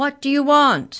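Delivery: big, loud, booming delivery. Narrator reading Maury leaning over Mallory to address her, booming voice. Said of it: "he boomed".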